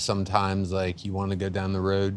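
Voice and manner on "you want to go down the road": Delaware County accent. Showing the O sound of the Delco accent: Delco accent. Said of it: "there's that O sound that comes up".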